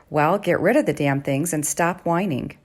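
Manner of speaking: plain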